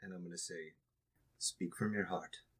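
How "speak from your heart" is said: theatrical stage whisper. Speaker putting a hand on her shoulder before she speaks, stage whisper. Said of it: "but stage whispering".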